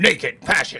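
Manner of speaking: put-on loud old movie trailer narrator voice. Describing old 60s movie trailers, the speaker does the old trailer narrator voice. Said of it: "the same old trailer voice from 1950".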